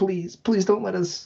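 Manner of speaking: high-pitched pleading. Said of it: "imagining E three begged them".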